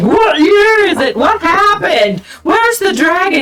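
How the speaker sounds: mock angry angel voice. Retelling how an angel shot out of an opening: imitating a pissed-off angel. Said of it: "He was really pissed off".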